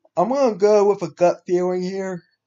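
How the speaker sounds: high, loud words stretched through a yawn. Picking a Night Football game against the spread, yawning while talking. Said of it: "Sorry, I'm yawning".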